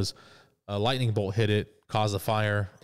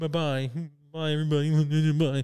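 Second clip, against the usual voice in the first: put-on crying girl voice, higher; 6 semitones higher than usual. Retelling a scene where Dorothy leaves everybody: imitating Dorothy crying.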